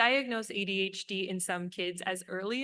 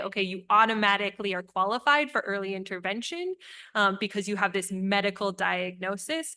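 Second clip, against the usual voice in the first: plain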